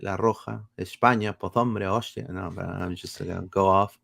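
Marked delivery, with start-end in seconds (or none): 0.0-2.2 bad, terrible put-on Spanish accent. Greeting a fan of the show, in a bad Spaniard accent. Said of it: "With my Spaniard accent".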